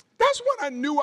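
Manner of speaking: voice rising in pitch as it goes. Telling the audience about the moment of knowing they were saved, voice going up. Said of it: "see how my voices went up?".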